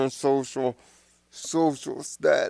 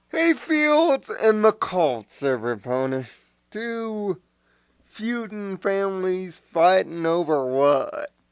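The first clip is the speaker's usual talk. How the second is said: put-on American southern accent; 2 semitones higher than usual. Greeting everybody, southern accent. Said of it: "sorry for the southern accent".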